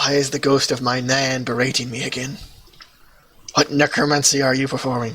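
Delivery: hushed whisper. A drunk character leans in close and speaks, whispering. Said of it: "just kind of whispers".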